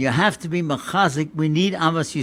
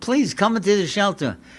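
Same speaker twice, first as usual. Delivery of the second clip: mock crying, tearful begging plea; 4 semitones higher than usual. Retelling a wife urging her husband into the shelter: retelling a tearful plea. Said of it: "she was crying and begging him".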